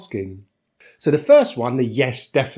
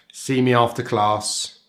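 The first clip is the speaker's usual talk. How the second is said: ordinary talk, nothing marked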